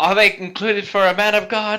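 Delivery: high, loud, shouted calling out. Narrating a character's reply to the man with the paperwork, shouting back. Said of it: "Godwin kind of shouts back".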